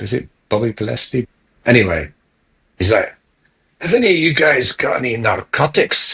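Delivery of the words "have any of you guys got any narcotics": put-on broad Glasgow accent, pitched up. Retelling a drunken Scotsman asking for narcotics: broad Glasgow accent. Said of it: "Broad Glasgow accent".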